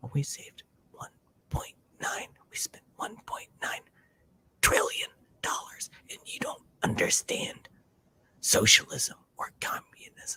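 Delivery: hushed, soft, breathy whisper. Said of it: "Now I'm whispering".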